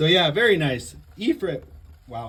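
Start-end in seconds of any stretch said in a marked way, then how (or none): 1.2-2.3 cracked, breaking voice, cracking on the word. Announcing the winner of a round: voice cracking. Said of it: "as my voice cracks".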